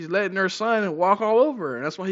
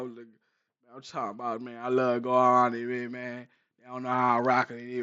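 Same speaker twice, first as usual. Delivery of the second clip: fake slow voice, lower and quieter; 7 semitones lower, 6 dB quieter than usual. Imitating how these dudes put on a voice, in a slowed-down fake voice. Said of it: "You trying to slow your voice".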